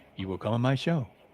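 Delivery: soft, calm, quiet, even voice with no force. Showing how to deliver a Jedi-mind-trick invitation, calm and not loud. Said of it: "you got to say that calm ... you never say it loud".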